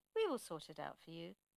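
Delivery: ordinary delivery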